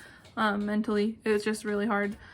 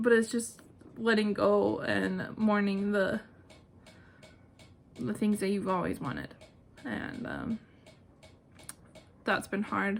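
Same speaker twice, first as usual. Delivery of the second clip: talking while crying, through tears. Answering a viewer question about infertility, crying while talking. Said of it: "I was not planning on crying".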